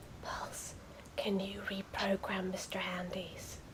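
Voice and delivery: mumbling under breath. Asking a teammate in character while sneaking: speaking under her breath. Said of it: "under her breath".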